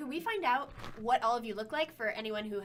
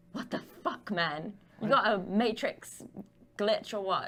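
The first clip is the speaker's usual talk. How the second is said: hushed stage whisper; 2 semitones lower, 4 dB louder than usual. Voicing a character hiding in chameleon armor, speaking to a teammate: half-whispering. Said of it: "she whispers to Z".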